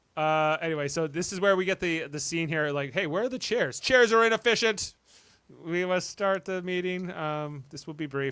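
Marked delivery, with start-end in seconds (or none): 2.9-8.3 mechanical android-like voice. Retelling a scene to co-hosts, robotic android delivery. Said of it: "He has like almost a robotic android delivery".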